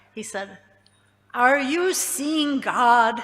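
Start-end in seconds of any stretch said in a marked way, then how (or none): 1.4-3.2 grand, loud, slow and unhurried booming voice. Retelling a hippie's question to Prabhupada, in a very booming voice. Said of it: "with a very booming voice".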